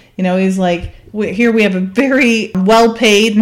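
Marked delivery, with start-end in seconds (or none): 2.6-3.4 stress placed on the word well-paid. Retelling a scene where one agent scolds another: imitating stress on WELL-PAID. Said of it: "he, like, stresses that".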